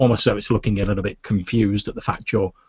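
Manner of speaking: ordinary delivery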